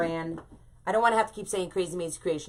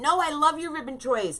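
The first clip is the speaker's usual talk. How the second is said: put-on shrill, high-pitched, frantic, desperate screaming; 9 semitones higher, 3 dB louder than usual. Recounting a comment mix-up with Linda, retelling screaming at her phone. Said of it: "I'm screaming at my telephone going".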